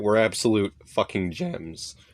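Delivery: voice cracking. Praising cheap video games that were great buys: voice cracking. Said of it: "My voice broke right there".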